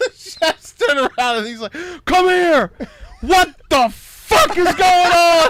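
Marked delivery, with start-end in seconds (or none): 2.1-5.5 loud, high, slow voice that cracks. Retelling a Hell's Kitchen scene at the trash can: imitating Gordon Ramsay's cracking voice. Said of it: "his voice is all cracking. I'm doing that on purpose".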